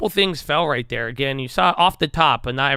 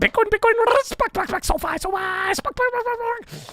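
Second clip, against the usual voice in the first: very high, fast babbling buzzword voice. Imitating how Chamath talks, after calling his accent Scamanese: mock Chamath accent. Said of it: "It's something like that".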